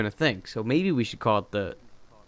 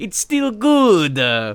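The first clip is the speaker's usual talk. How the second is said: very high-pitched, loud, put-on Italian accent; 8 semitones higher, 6 dB louder than usual. Showing a work catchphrase made up with a coworker, in an Italian accent. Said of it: "we say it in an Italian accent".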